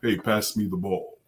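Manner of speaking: big, resonant inspirational-speaker voice. Imitating a speaker calling for the ball in basketball: Mark Greer voice, like Mufasa. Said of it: "He talks like, um, Mufasa all the time".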